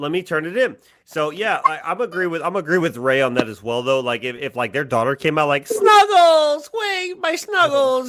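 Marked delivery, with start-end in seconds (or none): 5.7-8.1 acted-out very high, very slow sobbing wail. Acting out a daughter calling for her lost cat: imitating a crying girl. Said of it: "she's crying like she wanted her cat".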